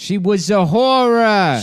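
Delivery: very slow character voice, every word drawn out. Doing an impression after being told he does a perfect one: Joey Pants impression. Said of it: "you do a perfect Joey Pants".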